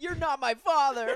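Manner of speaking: very high, very loud shout. Retelling a teen drama quarrel where the daughter yells back: imitating a teen yelling back. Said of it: "And then she yells".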